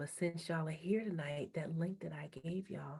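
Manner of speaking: hushed whisper. Telling those here tonight about a link given earlier, whispering. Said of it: "I don't know why I'm whispering".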